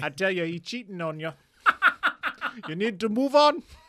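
put-on Jamaican accent. Asked to try the voice, speaker does a Miss Cleo Jamaican accent. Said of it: "attempting the Miss Cleo accent".

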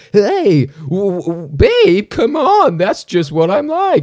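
very high, very slow, swooping, offhand, flippant whine. Imitating an actor who plays a cheater unseriously: imitating Jason Mantzoukas. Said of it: "He's just going like".

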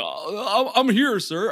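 slow, high, sad, mopey, nervous cat voice. Imitating a lawyer stuck behind a cat filter: sad mopey nervous cat voice. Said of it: "it would be this guy's voice".

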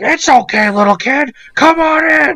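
very high, very loud creepy clown voice. Retelling what a bus driver said to a small kid: imitating a creepy Jack in the Box clown. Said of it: "creepy, like, Jack in the Box clown characters".

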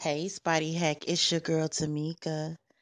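fake sultry, little sexy voice. Greeting the other speaker at the start of a message: put-on sexy voice. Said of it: "I tried to do the little sexy voice".

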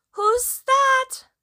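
very high, small, frightened little voice. Narrating a voice from inside answering a knock at the door: little frightened voice. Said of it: "A little frightened voice called out".

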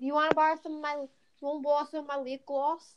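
clumsy fake British accent. Imitating British girls offering lip gloss: bad put-on British accent. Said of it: "don't know how to do British accent".

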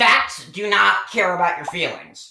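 nasal voice, stated flatly and outright. Doing a comedy bit playing a pundit: Ben Shapiro impression. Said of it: "Let's get back into the Ben Shapiro stuff".

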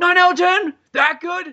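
excited, incredulous voice, high and loud.

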